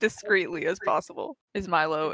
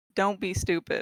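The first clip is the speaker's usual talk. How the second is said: plain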